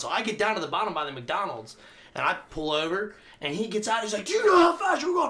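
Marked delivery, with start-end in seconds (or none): 4.3-5.3 very high, shrill, loud, frantic. Retelling being pulled over on a bike, imitating a cop freaking out. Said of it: "Freaking out on me".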